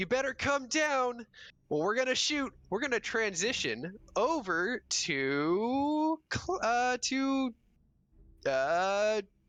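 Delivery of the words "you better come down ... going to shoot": high-pitched, loud shouting. Voicing guards ordering someone down from a tree: guards yelling up. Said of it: "as the guards are yelling".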